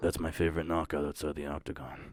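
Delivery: very quiet, soft, hushed voice. Retelling what Chuck said about a brawl: imitating Chuck's soft-spoken voice. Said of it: "he kinda talks like, like this, a little soft-spoken".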